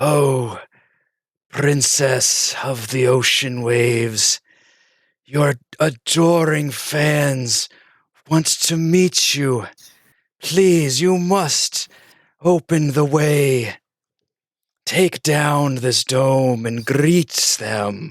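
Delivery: soothing, scaly whispered voice. Game master voicing a voice that whispers to a sleeping character: scaly, soothing whisper. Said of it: "whispering in a very um, s- uh, scaly but soothing voice".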